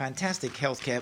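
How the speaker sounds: ordinary talk, nothing marked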